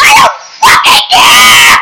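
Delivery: pissed-off, slow, loud, furious yelled outburst. Picturing someone pointing out spinach in her teeth: mock-angry outburst. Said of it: "I'd just be so pissed".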